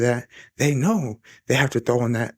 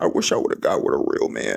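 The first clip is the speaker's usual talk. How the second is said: mock muttering under breath, lower; 10 semitones lower than usual. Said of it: "Whispering under her breath".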